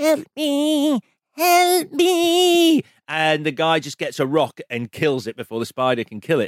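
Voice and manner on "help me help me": very high, drawn-out, shrill tiny fly scream. Describing the ending of a 1958 film, imitating a tiny fly screaming. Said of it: "this tiny fly voice".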